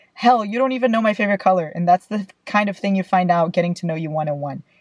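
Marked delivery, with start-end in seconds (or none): none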